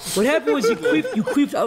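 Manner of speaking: accusing, accusatory tone.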